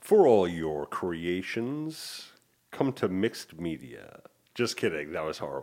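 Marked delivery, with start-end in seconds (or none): 0.0-4.2 slow radio commercial voiceover announcer voice. Asked to make a commercial, speaker does a short spot in a commercial voiceover voice. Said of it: "Now do it in a voiceover voice".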